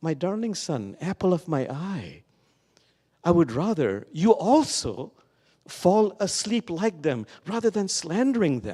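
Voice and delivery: gentle, loving, tender and sweet fatherly voice. Retelling a father's gentle reply to his son: imitating a tender, sweet father. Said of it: "And the father very tenderly".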